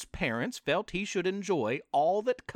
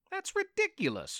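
defensive, very high-pitched voice. Accused of eating the candy himself, he answers: defensive reply. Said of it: "Red replied, defensively".

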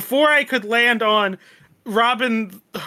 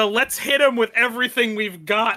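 normal talking voice

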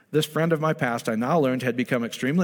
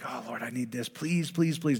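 put-on pleading, quieter; 6 dB quieter than usual. Showing how not to pray before sleep: mock begging. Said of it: "don't be begging God".

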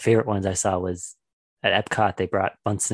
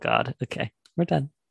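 plain

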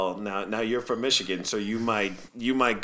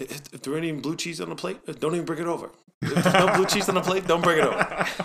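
put-on thick New York accent, pitched up; 7 semitones higher than usual. Retelling a favorite quote from a former FDNY lineman, in a thick New York accent. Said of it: "he's got that thick New York accent".

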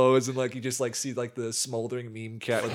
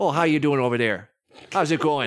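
put-on Midwestern accent; 2 semitones higher, 4 dB louder than usual. Improvising the hired worker as a midwestern man greeting visitors, midwestern accent. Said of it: "he's still going to be Midwestern".

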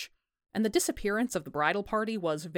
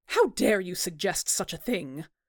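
sharp, snapped delivery. Mrs. Barron answers Tom's suggestion that the missing wife bailed, snapping. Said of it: "Barron snapped".

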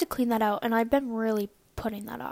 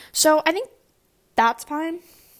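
hiccuping while speaking, higher and louder; 5 semitones higher, 4 dB louder than usual. Speaker keeps talking after suddenly getting the hiccups, hiccuping. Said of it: "excuse me, I have the hiccups".

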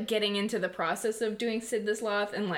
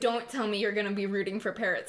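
ordinary talk

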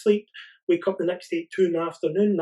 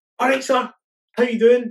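acted, lively, bright, energetic, pitched-up voice; 6 semitones higher, 7 dB louder than usual. Retelling how the speaker greeted an old man while holding the door at Morrison's, energetic greeting. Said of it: "I would speak to them with a lot of energy".

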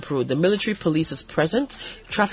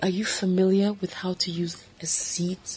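very slow, drawn-out, deliberate, over-careful delivery; 3 semitones higher, 4 dB quieter than usual. Retelling what a woman asked, imitate her speaking very slowly. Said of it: "she spoke so slow".

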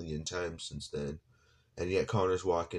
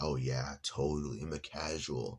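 slow, dry, fake sarcastic tone; 2 semitones lower than usual. Retelling a reply to a commenter who called them casual: retelling a sarcastic reply. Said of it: "I was being sarcastic".

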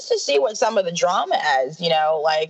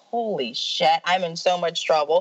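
plain

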